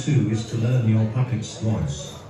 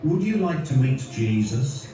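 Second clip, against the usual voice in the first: normal talking voice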